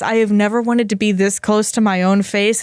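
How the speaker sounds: usual speaking voice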